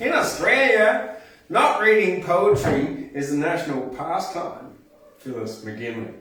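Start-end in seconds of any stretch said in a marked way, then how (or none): 0.0-4.8 put-on higher-pitched American accent. A speaker quotes the poet Phyllis McGinley, putting on an American accent. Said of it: "I'll do it in an American accent".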